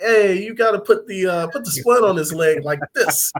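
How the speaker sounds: put-on New York accent, laid on thick. Retelling how a man on a show talks after the commercial break, imitating a New York accent. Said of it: "like New Yorker voice".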